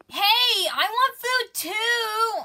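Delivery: very high, shrill, drawn-out spoiled-princess whine. When someone else is offered ice cream, she protests: demanding and whiny. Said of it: "a demanding, whiny little princess".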